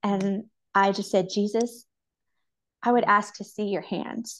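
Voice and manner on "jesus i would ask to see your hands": deeply moved, emotional, close to crying. Recounting an answer once given to a question, speaking emotional. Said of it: "it makes me emotional".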